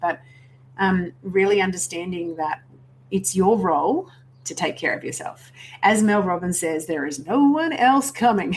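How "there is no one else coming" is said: fake, poor American accent, pitched up. Quoting what Mel Robbins says, in a bad Mel Robbins American accent. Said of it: "It's such a bad American accent".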